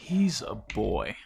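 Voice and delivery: muttered almost under breath, quiet. A father speaking of his son, almost under his breath. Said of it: "He says like almost under his breath".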